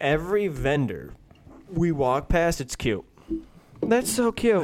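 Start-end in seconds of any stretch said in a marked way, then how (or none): 3.8-4.6 put-on very high, tipsy, squealing young woman's voice. Retelling what drunk women said: imitating drunk women.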